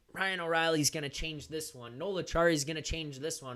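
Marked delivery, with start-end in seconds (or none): none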